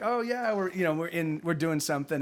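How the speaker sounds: plain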